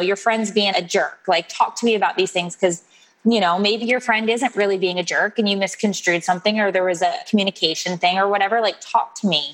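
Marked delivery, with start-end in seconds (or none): none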